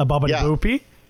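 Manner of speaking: tossed-off fake Italian gibberish. Recalling a cartoon bit about fake Italian: Peter Griffin fake Italian. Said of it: "Peter Griffin trying to speak Italian".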